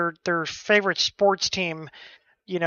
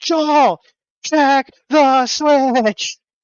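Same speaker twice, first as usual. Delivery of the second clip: exasperated, fed-up yelling, high and loud; 6 semitones higher, 5 dB louder than usual. Retelling yelling at his computer screen at Joel, retelling screaming at the screen. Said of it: "I'm like screaming at my fucking computer screen".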